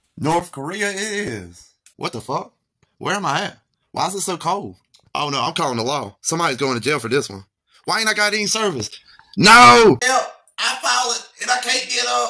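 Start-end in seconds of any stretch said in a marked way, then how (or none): 9.4-12.3 put-on high, drawn-out elderly man holler. Playing a fallen old man in a skit: elderly man hollering for help. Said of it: "sounds like an elderly man hollering for help".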